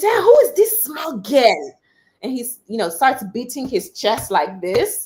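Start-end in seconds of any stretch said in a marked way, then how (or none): 0.0-1.8 put-on man's voice, loud, high, swooping shout. Retelling how the man next to the speaker at the clerk reacted: retelling his shouting. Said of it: "he just starts he starts shouting".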